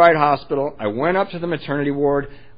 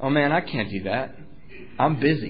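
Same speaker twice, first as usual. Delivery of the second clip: totally serious tone, much quieter; 5 dB quieter than usual. Retelling his reply to a man who laughed in his face, totally seriously. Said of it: "totally seriously".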